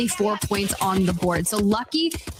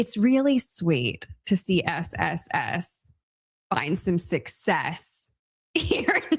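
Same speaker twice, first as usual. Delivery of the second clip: unhurried, deliberate, low, careful enunciation; 4 semitones lower than usual. Commentator calling a game result, said slowly. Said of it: "I'm glad you said that slowly".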